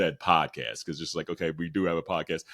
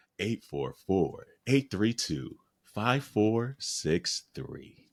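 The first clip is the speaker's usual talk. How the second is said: put-on late-night radio DJ voice; 4 semitones higher than usual. Reading a phone number again for the listener: late-night radio voice. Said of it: "late night radio voice".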